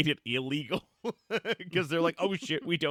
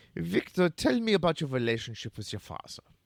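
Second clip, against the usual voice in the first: put-on Austrian accent. Retelling a scene as Sigmund Freud questioning Sark: Sigmund Freud voice. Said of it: "Sigmund Freud is like".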